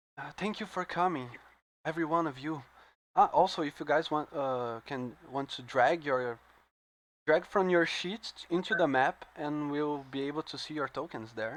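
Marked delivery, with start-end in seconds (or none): 0.4-2.7 gentle, soft, calm, composed voice. Narrating a tabletop scene, speaking as Rhaenys to the players in a softly calm voice. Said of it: "in a softly calm voice".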